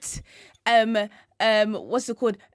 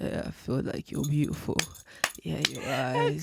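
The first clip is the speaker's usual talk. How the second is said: put-on husky groggy voice, lower and quieter; 9 semitones lower, 9 dB quieter than usual. Mocking a contestant who still has his morning voice. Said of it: "he still has his morning voice".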